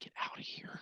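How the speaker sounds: whispering a little too loud. Repeating the whispered line to Colonel Bravo: whispering a little too loud. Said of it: "whispering a little too loud".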